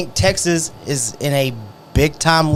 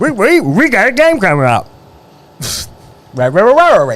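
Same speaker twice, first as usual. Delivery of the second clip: goofy cartoon dog voice, much higher, louder; 5 semitones higher, 5 dB louder than usual. Asked to sound like Scooby-Doo while hyping a rivalry game, bad Scooby-Doo impression. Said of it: "That was a bad Scooby-Doo".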